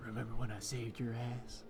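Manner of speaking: whispered character voice. Voicing a character leaning close to a wounded foe's ear: whispering in character. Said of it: "I whisper in his ear".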